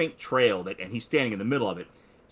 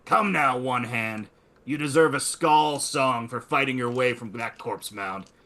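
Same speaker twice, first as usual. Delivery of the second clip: rough, gruff voice calling out. Someone outside the barrow calls out to a warrior, gruff voice. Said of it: "gruff voice from outside the barrow that calls out".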